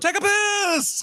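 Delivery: mock very high-pitched shouted echo, "piss" drawn out. Retelling how sushi staff shout everything back at customers, retelling a shouted call-back. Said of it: "they shout everything back at you".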